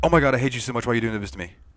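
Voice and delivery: rapid words run together. Acting out how she writes her messages all run together: very fast run-on speech. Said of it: "they would speak really quickly".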